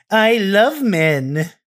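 loud, high, flamboyant camp voice.

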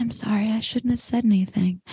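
strangely soft-spoken, hushed, weird soft voice. Retelling what Tripp said to S, imitating Tripp's weird soft-spoken voice. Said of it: "Tripp does this weird soft-spoken voice".

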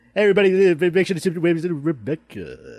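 loud club DJ voice. Answering a call for a stripper DJ voice: stripper DJ voice. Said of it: "stripper D J?".

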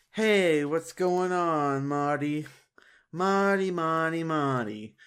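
put-on Italian mobster accent. Retelling how Cyraxx calls in to Marty: Godfather impression. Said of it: "his Godfather impression".

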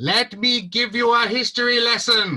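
booming, echoing, very high and loud. A narrator voices a cloaked figure across a dark cavern, echoing voice. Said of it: "a voice echoes across".

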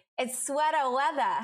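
Maine-style pronunciation. Speaker repeats a phrase the way a Mainer would, in a Maine accent. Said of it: "Let me say it like the Mainer I was raised to be".

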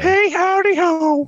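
very high, loud, belted out way up top. Signing off the episode with a catchphrase: Mister Hanky voice. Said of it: "that was Mister Hanky, the Christmas poo".

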